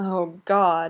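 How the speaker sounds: breathy moan. Narrator reads Tyler's words as he watches Dylan intently; breathy moan. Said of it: "Tyler moans breathily".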